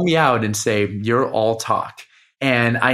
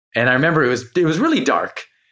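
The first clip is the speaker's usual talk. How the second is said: normal talking voice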